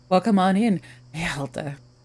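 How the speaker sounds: slow, seductive, lingering put-on sexy voice. Welcoming someone by name on in, with a put-on sexy voice. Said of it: "Maybe I'll just try to say it in like a sexy way".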